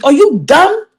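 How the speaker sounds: put-on New York accent, best attempt. Talking about a woman, the speaker switches into her best New York accent. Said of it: "In my best New York voices".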